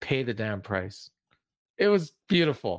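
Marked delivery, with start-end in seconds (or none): 0.0-1.1 calm, lower, quieter delivery. Retelling a comedy sketch where the character doesn't shout, retelling a very calm line. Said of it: "he very calmly says".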